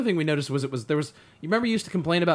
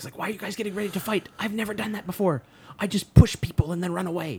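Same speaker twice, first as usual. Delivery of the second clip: frightened, anxious, scared half stage whisper; 3 semitones higher than usual. Retelling a favorite movie moment before a fight: imitating the Flash's scared half-whisper. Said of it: "he's scared whispering".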